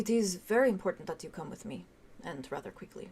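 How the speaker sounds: very soft, hushed, soft-spoken voice. A game master voices a man approaching the four players, speaking very softly. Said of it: "he says very softly".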